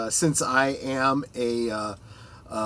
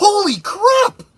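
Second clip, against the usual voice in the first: mock shrill, very high, very loud startled exclamation; 8 dB louder than usual. Retelling a game robot greeting them by name: retelling own shocked exclamation. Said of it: "I was shocked".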